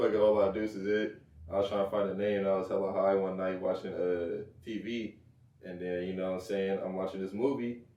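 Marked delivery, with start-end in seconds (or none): none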